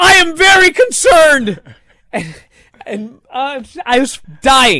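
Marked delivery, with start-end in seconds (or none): 0.0-1.6 put-on scream, much higher and louder. Retelling a scene as a player is put on a stretcher: imitating Mike Bennett screaming. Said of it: "he screams at the top of his lungs".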